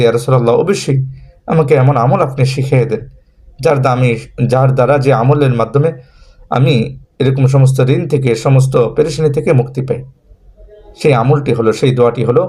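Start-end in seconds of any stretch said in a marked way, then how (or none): none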